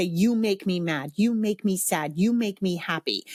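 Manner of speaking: normal talking voice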